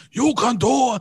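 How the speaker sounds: mild, in-your-face, coach-style yell. Retelling a deadlift record where he yelled in the lifter's face, imitating Arnold Schwarzenegger screaming. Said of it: "was like screaming in his face".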